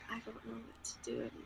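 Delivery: barely audible, very quiet, hushed muttering under the breath. Voicing a nervous character who mutters under her breath. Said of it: "under her breath".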